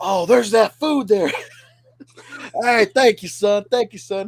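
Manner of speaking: put-on drunk man's voice. Retelling what a drunk customer said when served: imitating a drunk man. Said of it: "he's getting drunker as I'm wa-".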